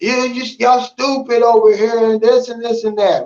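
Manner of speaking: full-throated, high, shrill scream. Retelling how a passenger in a stopped car screamed at police: imitating someone screaming. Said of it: "he's screaming".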